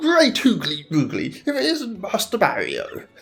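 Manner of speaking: animated, high, swooping, sing-song put-on British accent. Voicing a character who greets Master Mario: put-on British accent. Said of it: "this is a voice I should nail being British myself".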